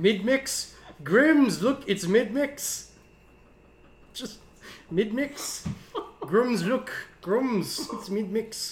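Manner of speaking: put-on drifting, musing tech billionaire voice, slightly high. Acting out a tweet of someone impersonating Elon Musk watching Mad Max, do an Elon Musk impression. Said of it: "someone impersonating Elon Musk".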